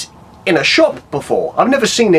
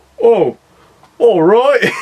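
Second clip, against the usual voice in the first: pitched-up, unbothered, underwhelmed, shrugging; 6 semitones higher, 4 dB louder than usual. Retelling another person's reaction to a find: Ryan impression. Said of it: "That's my Ryan impression".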